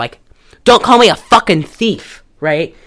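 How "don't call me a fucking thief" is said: louder, higher yell. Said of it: "he's yelling at her".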